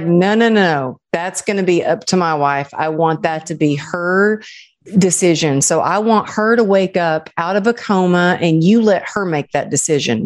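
usual speaking voice

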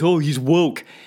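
dumb mocking voice. Saying the word woke the way it now gets said, dumb mocking voice. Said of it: "without putting on that dumb voice".

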